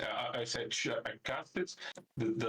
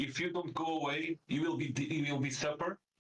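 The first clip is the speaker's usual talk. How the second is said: shouting, pitched higher; 5 semitones higher than usual. Playing a character scaring off seagulls with a threat: yelling at the seagulls. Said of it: "I just keep yelling".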